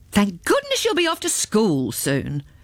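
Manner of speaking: cross, irritated, with swooping pitch. Narrator reads the father's words to Elizabeth after milk spills on the table: cross. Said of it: "her father said crossly".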